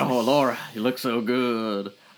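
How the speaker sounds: lusty, sweet-talking, lustful tone. Retelling how a character reacts to a visitor: imitating a horny guy. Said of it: "horny as fuck".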